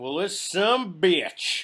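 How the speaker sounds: loud, very slow, drawn-out rural drawl voice. Imitating how the on-screen Redneck Santa Claus would say it. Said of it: "That's how he would say it".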